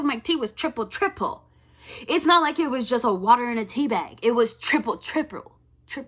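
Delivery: angry, tripping and stumbling over the words. Recounting a laptop mishap, speaker gets mad, stumbling over words. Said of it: "I'm getting so mad I can't even pronounce my words right".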